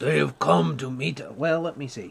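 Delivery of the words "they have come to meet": commanding, authoritative voice. Narrator voicing an unseen figure pushing through trees, in a commanding voice. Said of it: "you hear a commanding voice say".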